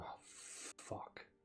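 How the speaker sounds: hushed, breathy, whispered mutter under the breath. A game master voices a character's reaction, muttered under breath. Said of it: "Under her breath, she just mutters".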